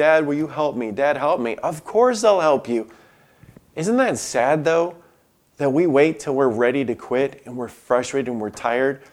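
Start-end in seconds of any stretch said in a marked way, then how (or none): 0.0-1.6 put-on small, whimpering child voice. Recalling a child tangled in a shirt calling for Dad, imitating a child whimpering. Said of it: "his little whimpering voice saying".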